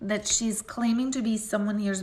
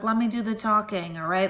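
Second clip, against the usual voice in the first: ordinary talk, nothing marked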